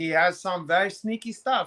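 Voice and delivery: ordinary talk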